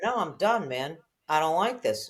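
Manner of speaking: small, tiny little voice. Acting out a tiny inner voice arguing with a big loud one; tiny little voice. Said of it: "And the tiny little".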